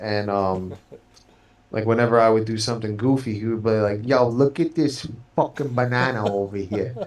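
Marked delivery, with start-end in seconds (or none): 4.1-7.1 put-on thick, broad Brooklyn street accent. Quoting an uncle reacting to the speaker doing something goofy, imitating his heavy Brooklyn accent. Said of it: "he had like this heavy like Brooklyn kind of jerky boys accent".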